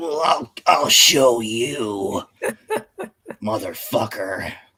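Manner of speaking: intense, slow, swooping anime villain voice, "you" drawn out. Describing how a character talks, the speaker imitates him, intense anime villain voice. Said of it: "talks like an intense anime character".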